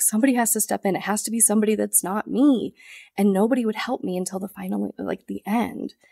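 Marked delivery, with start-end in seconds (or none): 0.0-2.7 mock tearful pleading through sobs. Speaker retells talking to people who kept them in the dark, re-enacting past sobbing. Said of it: "I'm like literally sobbing to them".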